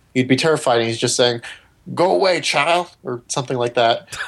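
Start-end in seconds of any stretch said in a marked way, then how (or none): 1.9-2.9 terrible put-on Louisiana accent, pitched up. Describing a missing father coming back in a hospital gown, in a terrible louisiana accent. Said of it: "that was a terrible Louisiana accent".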